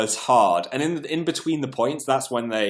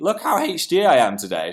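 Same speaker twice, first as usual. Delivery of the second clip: sudden little voice crack mid-line; 3 semitones higher than usual. Speaker addressing the cleaners on a stream, voice cracking. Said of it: "I had a little voice break then".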